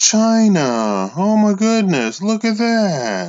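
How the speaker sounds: sarcastic feigned shock, high, slow, "China" stretched long. Revealing who is buying up gold: sarcastic mock surprise. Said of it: "I'm sarcastic".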